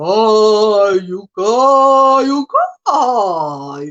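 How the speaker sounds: deep, grave, eerie, drawn-out ghostly call. Retelling the grandmother's story, acting out the voice that called out: deep voice calling out. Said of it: "A voz faz assim".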